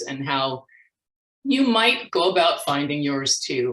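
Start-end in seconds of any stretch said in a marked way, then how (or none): none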